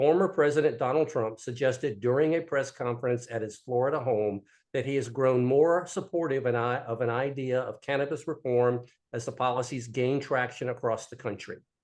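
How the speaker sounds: normal talking voice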